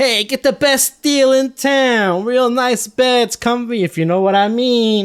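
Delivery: very high, loud, drawn-out street-crier scream. Describing a scene, voicing a kid outside an establishment: kid screaming a sales pitch. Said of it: "a kid out there kind of like screaming".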